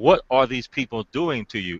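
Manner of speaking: ordinary talk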